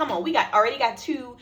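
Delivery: normal talking voice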